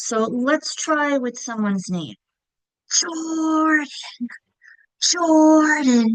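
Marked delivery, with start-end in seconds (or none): 2.9-6.2 whispered, higher pitch. Showing how to hear the accented syllable with the whisper trick: whispering the name Jordan. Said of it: "I'm doing it to whisper".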